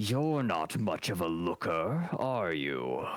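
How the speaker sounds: dry, raspy monster creature voice. Game master voicing a creature speaking to the player, in a raspy creature voice. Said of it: "it rasps at you".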